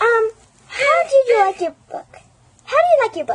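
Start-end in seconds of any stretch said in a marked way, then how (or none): 2.6-3.4 talking parrot voice. Voicing a parrot that copies the host's question: talking parrot voice. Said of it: "enjoy the parrot talking".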